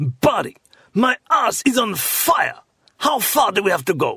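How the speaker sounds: put-on thick Russian accent, slightly angry, high-pitched. Retelling a riding companion's reply after fifty miles, imitating Yev's mock-angry Russian accent. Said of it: "with his typically thick Russian accent with a slightly angry tone".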